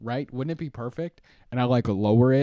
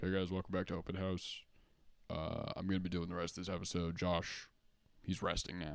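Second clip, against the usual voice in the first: much lower and much quieter voice; 6 semitones lower, 15 dB quieter than usual. Imagining hosting the rest of the stream alone, in a lower tone. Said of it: "it's just me with the lower tone now".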